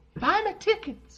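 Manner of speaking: put-on very high, creepy old-man voice. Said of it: "You sound like the old pedophile neighbor on Family Guy".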